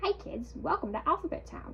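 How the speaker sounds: weird sing-song electronic toy voice. Retelling turning on a toy for the first time: imitating the Alphabet Town toy's weird voice. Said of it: "a weird voice that was like".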